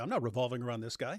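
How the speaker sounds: ordinary talk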